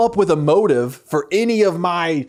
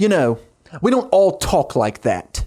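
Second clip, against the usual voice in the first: fake, slow, drawn-out put-on British accent. Retelling a show scene where the cat answers back: put-on British accent. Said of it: "the cat responds with a British accent".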